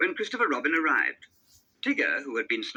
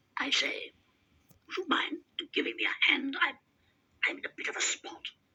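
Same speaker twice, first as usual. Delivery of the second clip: strangled, breathy whisper, squeezed out; 5 dB quieter than usual. Reading a story, Tigger calls out to Pooh: strangled Tigger voice. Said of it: "a strangled voice announced".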